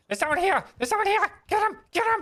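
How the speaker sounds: goblin chatter voice, pitched way up. Voicing goblins who spot someone landing on leaves: goblin voices.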